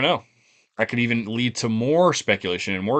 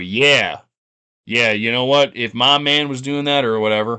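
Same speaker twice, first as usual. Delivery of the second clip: loud caricatured voice, put on; 2 semitones higher, 5 dB louder than usual. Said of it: "I shouldn't do the racist voice".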